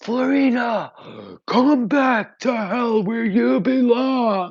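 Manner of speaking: very slow, drawn-out, booming demonic scream. Retelling what a giant demon rising from the ground yelled: imitating a demon screaming. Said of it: "he screams out".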